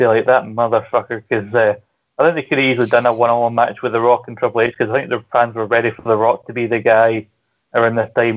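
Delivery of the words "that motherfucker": put-on annoyed wrestler voice. Retelling what The Rock said after the match: imitating an annoyed The Rock. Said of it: "The Rock afterwards looks quite annoyed".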